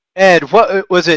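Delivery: ordinary delivery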